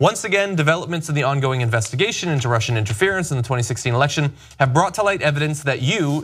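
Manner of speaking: normal talking voice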